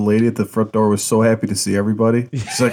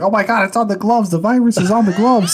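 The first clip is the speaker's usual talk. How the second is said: mock very high, frantic, freaked-out outburst; 9 semitones higher than usual. Retelling a video of someone in a car: imitating someone freaking out. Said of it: "he's just freaking out".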